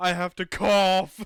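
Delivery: play-acted very loud, forceful, emphatic, aggressive delivery. Mimicking how the other speaker said it, deliver it mock-aggressively. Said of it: "You said it so aggressively".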